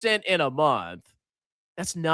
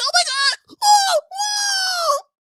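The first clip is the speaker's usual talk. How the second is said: very high, loud, very slow, drawn-out panicked cry; 5 dB louder than usual. Describing an emotional man, act out his panic: imitating someone panicking. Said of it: "And then he's panicking".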